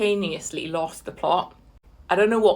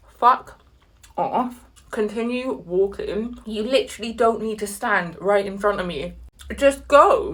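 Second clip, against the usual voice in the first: ordinary delivery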